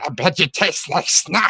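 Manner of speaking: put-on, high, little goblin creature voice. Recounting takes recorded for a posted goblin picture, goblin voice. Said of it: "that'd be great to do the voice".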